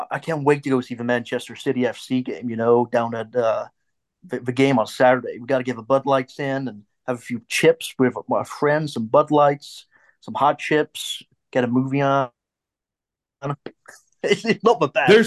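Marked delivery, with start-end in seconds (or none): 0.1-12.3 put-on American accent. Asked by the others to do a fake American accent. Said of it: "let's hear you do your fake American accent".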